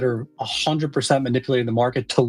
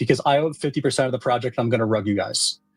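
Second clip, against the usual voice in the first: usual speaking voice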